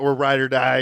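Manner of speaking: ordinary talk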